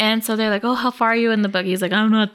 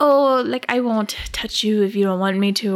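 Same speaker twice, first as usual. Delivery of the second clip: put-on British accent. Retelling a book scene, voicing the Count: the Count's British accent. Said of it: "This is my accent".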